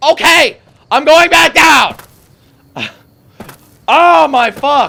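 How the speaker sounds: very loud, shrill, high, drawn-out exasperated yelling. Speaker blocked by an invisible wall, addressing viewers, bursts into frustrated shouting. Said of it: "Forgive me for shouting".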